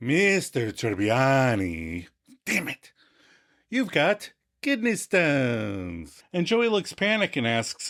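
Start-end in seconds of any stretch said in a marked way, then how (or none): 0.0-6.2 low, slow, drawn-out doctor voice. Quoting the doctor's line after being asked for his way of saying it: Iqbal Theba voice. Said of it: "say kidney stones the way he says kidney".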